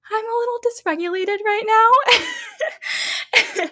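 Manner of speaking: tiny, very high, slow little voice. Retelling what the other person says over the phone, in a little small voice. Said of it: "You hear this little small voice".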